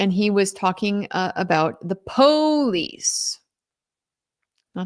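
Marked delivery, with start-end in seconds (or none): 1.9-3.4 high, scornful, disparaging, exaggerated put-on vernacular. Recounting how a man mimicked witnesses' speech in court: mocking put-on vernacular.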